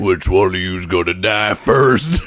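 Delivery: deep, low, two-pack-a-day smoker trucker voice. Mocking a villain's dub voice, doing Dodoria as a two-pack-a-day trucker. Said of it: "sounds like a fucking two-pack-a-day trucker".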